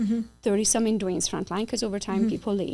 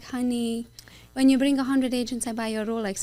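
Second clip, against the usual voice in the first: mock voice of open disbelief, skeptical, doubting; 3 semitones higher than usual. Retelling the sponsor's Rolex promise: imitating sponsor's doubtful tone. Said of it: "a little bit of a tone in his voice".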